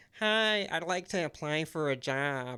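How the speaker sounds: slow, nerdy, dorky put-on dweeb voice. Retelling a cartoon scene, imitating a dweeb asking for a job. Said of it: "And that's how he sounds".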